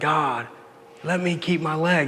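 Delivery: desperate, pleading crying out. Retelling crying out to God before surgery: retelling own cry to God. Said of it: "I really cried out to God".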